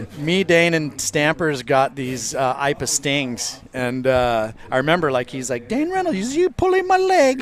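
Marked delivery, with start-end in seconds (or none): 5.7-7.4 put-on speaking with Pidgin accent. Retelling what a board shaper said, put-on Pidgin accent. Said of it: "Why do you sound like an Irish guy".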